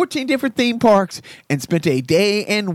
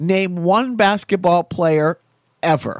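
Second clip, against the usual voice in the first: ordinary talk, nothing marked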